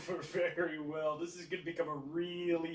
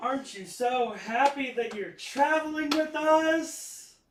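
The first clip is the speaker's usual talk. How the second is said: very loud, very high, dripping sarcasm; 10 semitones higher, 10 dB louder than usual. Asking a fellow traveler if they're happy to travel along: heavy sarcasm. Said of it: "Laced with just as much sarcasm as I can possibly get into it".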